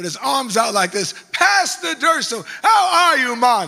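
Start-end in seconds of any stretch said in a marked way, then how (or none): 1.3-3.7 put-on strong Jamaican accent, higher and louder. Retelling how a police officer called out his name: strong Jamaican accent. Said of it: "in this strong Jamaican accent".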